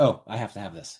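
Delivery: ordinary talk, nothing marked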